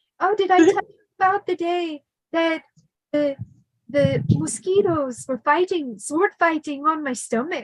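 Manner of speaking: bad put-on Irish accent. Retelling a story Pap told while showing his scars, imitating Pap's Irish accent. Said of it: "I can't even do an Irish accent".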